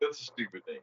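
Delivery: annoyed, irritated, angry delivery. Retelling the boss's reaction to a proposed product name: imitating an angry boss. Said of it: "he got all mad at me".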